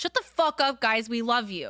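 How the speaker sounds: slow, teasing, playfully aggressive tone with a bit of bite. Acting out a spoken Instagram comment to fans: mock aggressive. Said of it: "even that was a little aggressive".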